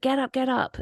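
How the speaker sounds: play-acted detective shouting, barking, pitched high. Retelling a film scene where detectives shout at a man: imitating shouting. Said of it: "they're shouting at the man, like".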